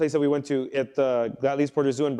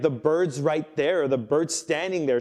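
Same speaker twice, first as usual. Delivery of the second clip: usual speaking voice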